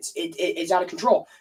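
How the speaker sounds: ordinary talk, nothing marked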